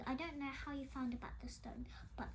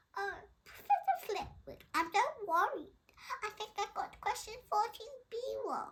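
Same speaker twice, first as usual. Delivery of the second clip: squeaky put-on voice, very high and loud; 10 semitones higher, 9 dB louder than usual. Reading a story aloud, a boy mimicking a girl: mock high voice. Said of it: "He put on a high voice".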